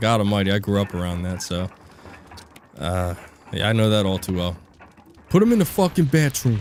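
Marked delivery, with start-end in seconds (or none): 5.3-6.6 thick, hard New York Bronx accent, pitched up. Speaker shows the accent he grew up around: hard Bronx, New York accent. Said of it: "That's that hard Bronx, New York accent".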